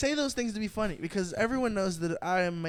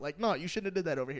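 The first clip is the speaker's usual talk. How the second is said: normal talking voice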